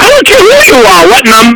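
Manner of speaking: very high-pitched, shrill, swooping shout. On a phone call, answering a caller who says he's a cop, shouting. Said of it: "Stop shouting!".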